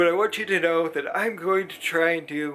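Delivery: speaking through a yawn. Vlogger tells viewers about plans after surgery, yawning. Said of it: "excuse me, I'm yawning".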